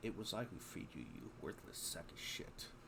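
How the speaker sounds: very quiet whispered grumble under the breath. Playing a character who resents a freed prisoner's thanks: muttering. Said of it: "Catherine will mutter".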